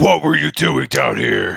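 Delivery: put-on angry voice. In a game, a player questions a surrendered captive, in a put-on angry voice. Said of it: "are you talking like that?".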